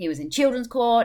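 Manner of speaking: high, loud, dismissive shrugging scorn. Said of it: "shrugs a dismissive attitude".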